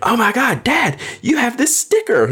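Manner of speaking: mock shrill, high, swooping child's scream. Retelling how his son reacted on seeing the sticker: imitating Tyler screaming. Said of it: "then he starts screaming".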